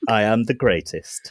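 mechanical, robotic put-on robot voice. Performing a robot character who refuses to be switched off: robot voice. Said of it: "And that's my robot voice".

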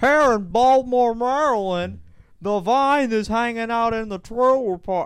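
very high, loud, dumbest-sounding stupid voice. Speaker recounting how a movie opens, stupid voice. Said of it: "stupid voice".

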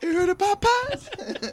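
put-on high excited comedic voice. Quoting a movie scene about fried chicken: Chris Tucker impression. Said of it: "how Chris Tucker said Popeyes".

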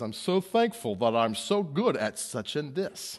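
slow, drawn-out, boastful bragging. Warning against bragging by acting out a Pharisee: mock bragging Pharisee. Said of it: "you'll sound like the Pharisee who says".

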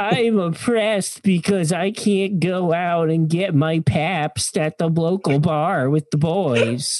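high, slow, whiny mock voice. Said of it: "What is this voice?".

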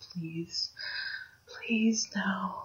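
pleading, barely above a whisper. Amelia pleads with a decayed undead being, barely above a whisper. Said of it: "in a voice barely above a whisper says".

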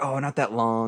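bubbly, giggling, flirty voice. Retelling how a police officer who pulled them over spoke: imitating a giggly voice. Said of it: "all giggly and stuff".

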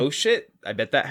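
ordinary talk

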